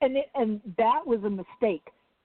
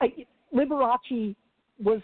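usual speaking voice

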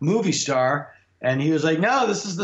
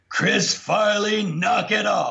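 mock rough, slow, drawn-out call as if from afar; 4 semitones higher than usual. Retelling a rehearsal story, a call from across the soundstage: imitating a booming voice. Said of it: "this booming voice from across the soundstage".

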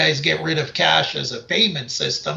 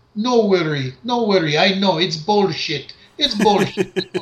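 put-on Polish accent, higher and slower; 3 semitones higher than usual. Retelling what a woman said to a regular customer, imitating a Polish accent. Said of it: "in her Polish accent".

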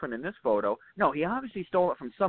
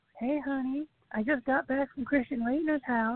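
very high, terrible put-on female voice; 10 semitones higher than usual. Show how you could prank Joe's voicemail, doing a bad impression of a woman. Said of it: "it's a terrible impression".

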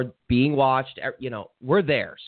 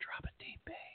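barely voiced, hushed, almost a whisper. Repeating another speaker's fishing tip: imitating a whisper. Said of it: "It was almost like a whisper".

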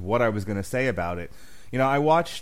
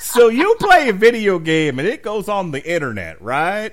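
very loud, very slow, put-on southern accent; 7 semitones higher, 9 dB louder than usual. Explaining what a Twitch stream is, in a put-on southern accent. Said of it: "I don't know why I have to do that in a southern voice".

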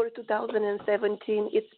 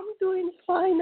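odd, slightly high, under-the-weather sick voice; 9 semitones higher, 4 dB louder than usual. Answering a radio host on a call while sick: voice strange from being sick. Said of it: "That's why my voice is so strange".

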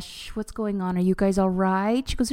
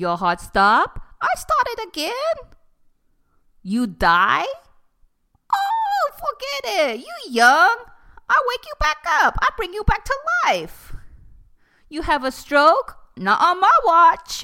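put-on very high, shrill, loud, sing-song swooping Mexican accent; 13 semitones higher, 5 dB louder than usual. Retelling a conversation, the speaker acts out someone's words: imitating a Mexican maid. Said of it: "so I'm just imitating".

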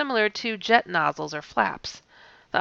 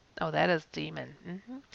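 ordinary delivery

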